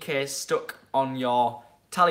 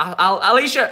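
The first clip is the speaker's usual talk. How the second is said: ordinary talk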